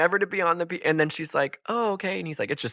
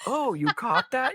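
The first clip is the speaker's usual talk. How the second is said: mock amazed, caught-off-guard tone, pitched up; 9 semitones higher than usual. Retelling how Jacob answered a question, imitating Jacob sounding surprised. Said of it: "he literally says it so surprised".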